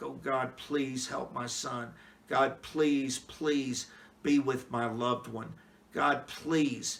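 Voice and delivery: mock pleading, acted begging tone. Acting out a typical prayer to God: acting out pleading prayer. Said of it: "it almost like you're pleading with God".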